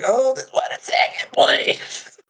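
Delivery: very slow, drawn-out grunting voice. Speaking in character to put off someone calling down to a tent: grunting the line. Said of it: "that's why I'm grunting it".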